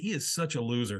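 ordinary talk, nothing marked

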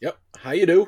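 very loud, booming, high voice, too loud. Just introduced by the host, greeting him: loud. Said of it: "You're a little loud".

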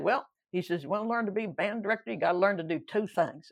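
rough, so-so attempt at a North Carolina accent. Recalling a teacher from North Carolina taking him aside, not-so-good North Carolina accent. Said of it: "I can't do a good North Carolina accent".

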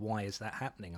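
plain

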